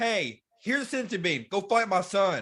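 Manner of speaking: plain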